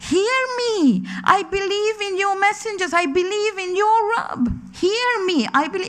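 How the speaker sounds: high, shouted, screaming cry. Retelling a man's cry as he is dragged away: imitating someone screaming. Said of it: "he's screaming and he's shouting".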